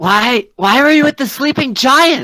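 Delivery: shouting. Playing a character questioning the party: yelling in character. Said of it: "I'm just gonna yell".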